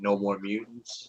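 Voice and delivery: normal talking voice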